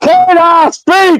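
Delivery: shrill, very high shout. Retelling how Ron asks to speak: imitating Ron yelling. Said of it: "he starts yelling".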